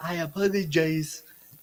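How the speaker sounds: loaded, pointed sorry said with an edge. Retelling how the dad got off the plane, imitating the dad's apology. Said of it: "Why you gotta say it like that?".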